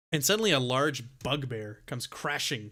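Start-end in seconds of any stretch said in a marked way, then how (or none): none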